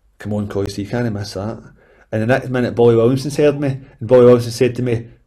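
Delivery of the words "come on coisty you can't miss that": put-on cheeky mutter, lower and quieter. Retelling a remark about a missed chance, imitating a cheeky mutter under breath. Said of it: "said cheekily, under my breath".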